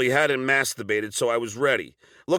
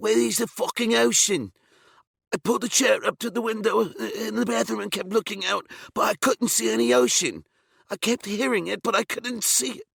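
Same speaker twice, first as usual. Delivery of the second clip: slurred, barely coherent mumble, pitched up; 9 semitones higher than usual. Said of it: "says in his barely coherent [name] voice".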